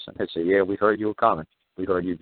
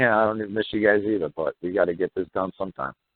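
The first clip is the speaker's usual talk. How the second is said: plain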